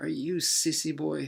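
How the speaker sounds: mock taunting tone. Speaker retells a Muay Thai assistant coach's reply, imitating a mocking taunt. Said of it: "He made fun of me".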